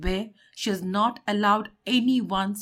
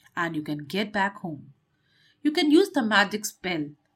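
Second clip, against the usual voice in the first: usual speaking voice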